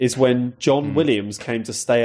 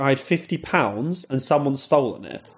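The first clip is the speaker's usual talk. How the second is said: ordinary delivery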